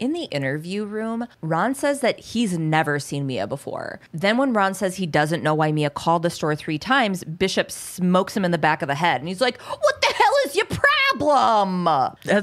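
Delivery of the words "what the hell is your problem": exaggerated cartoony New York accent, swooping pitch. Retell a man's reaction in an interview room scene, in a cartoony New York accent. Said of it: "Your New York accent".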